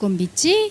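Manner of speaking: ordinary talk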